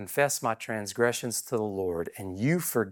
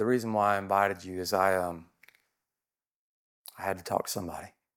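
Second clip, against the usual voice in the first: lowered voice, dropped even lower; 2 semitones lower than usual. Quoting a man who confided in him over coffee, retelling a lowered voice. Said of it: "He lowered his voice and said".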